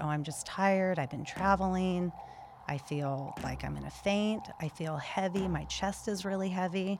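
plain

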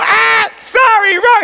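mock buzzer sound, very high, loud, slow wail.

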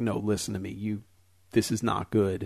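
put-on very serious, grave tone. Retelling a psychic's warning about a haunted house: imitating a very serious psychic. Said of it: "very serious".

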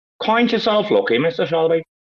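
put-on Northern Irish accent, high pitch. Coaching someone on easy Irish accents with an example line, Northern Irish accent. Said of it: "get Liz into Northern Irish accents".

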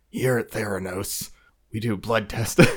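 very fake, put-on husky voice. Describing a woman's put-on Theranos persona, imitating her very fake husky voice. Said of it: "put on this very fake".

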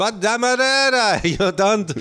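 Israeli accent impression. Retelling an audition imitating an Israeli guy, imitating an Israeli guy. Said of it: "I had to do an Israeli guy".

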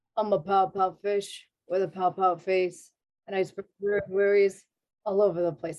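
read dead level with no tune. Showing one of the different voices they secretly do, flat monotone Pout-Pout Fish voice. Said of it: "he has no inflection in his voice".

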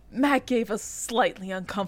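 plain

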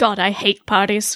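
put-on British accent. In a story scene, a player voices a character entering a building, british accent. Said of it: "I can't say parties with the British accent".

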